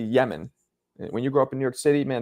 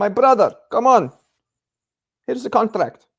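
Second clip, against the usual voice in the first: put-on Middle Eastern accent, higher and louder; 10 semitones higher, 6 dB louder than usual. Imitating Turkey offering a contract: imitating Turkey. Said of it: "that imitation of him was also".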